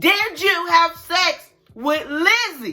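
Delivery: high, loud, drawn-out yell, every word spaced out. Retelling confronting a classmate in a quiet hallway: retelling own yell. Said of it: "Now I'm yelling in the hallway".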